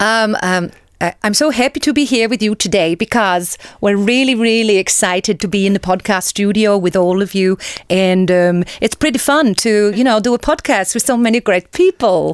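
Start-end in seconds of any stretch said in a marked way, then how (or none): 1.2-12.3 Norwegian accent with general Scandinavian tinge. Asked for a norwegian accent, greeting podcast listeners: norwegian accent.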